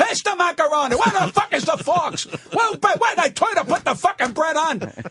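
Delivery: put-on high hollering. Retelling how family talked at home years ago: imitating family yelling at dinner. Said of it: "to you it's yelling".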